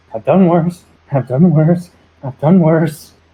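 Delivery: whispered muttering. Voicing Jerry repeating a line to himself: whispering to himself. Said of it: "Jerry's just gonna be whispering to, to himself".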